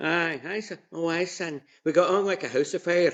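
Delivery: put-on high-pitched Scottish grandmother accent.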